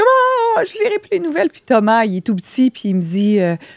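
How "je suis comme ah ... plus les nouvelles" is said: play-acted very high-pitched, tearful sobbing voice. Retelling being taken off the air, imitating her own crying. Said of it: "je pleure".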